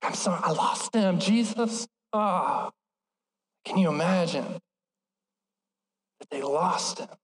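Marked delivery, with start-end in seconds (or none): 0.0-1.9 hushed, secretive, apologetic whisper. Acting out parents whispering an apology to god: imitating a whispered apology. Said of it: "whispering 'cause they're like".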